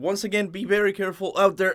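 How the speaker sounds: voice breaking, cracking high. Talking to viewers in a video, voice cracking. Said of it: "Sorry about that voice crack".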